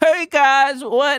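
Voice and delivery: put-on country voice, high-pitched. Praising how a colleague does voices, the speaker imitates him, country voice. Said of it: "Like he does like this country voice".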